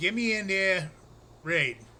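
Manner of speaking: words given a put-on New Jersey accent. Speaker shows how a phrase sounds with a Jersey spin: put-on Jersey accent. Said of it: "put a Jersey spin on it".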